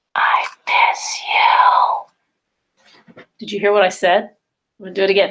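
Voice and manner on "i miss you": soft, hushed, close whisper. Showing how to whisper through a tube to someone close: whispering. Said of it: "I'm gonna whisper something to you".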